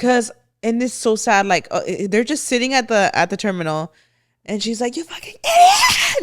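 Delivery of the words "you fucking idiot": mock loud, piercing, very high screech. Retelling a woman at the terminal yelling at the man beside her, imitating someone screaming. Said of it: "Like screaming at him".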